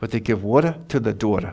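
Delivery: quick, fast New Jersey accent. Explaining how people in New Jersey talk: New Jersey accent. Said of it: "That's the New Jersey accent".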